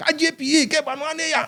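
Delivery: high, loud, excited celebratory call.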